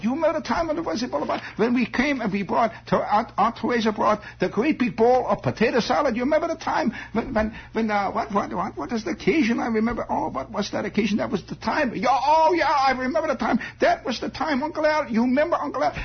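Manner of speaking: high, excited vague German accent, pitch going way up.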